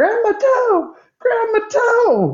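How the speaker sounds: very high, swooping, drawn-out pained wailing scream. Retelling a scrimmage where a player went down cramping, imitating Babatunde screaming. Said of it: "all of a sudden he starts screaming".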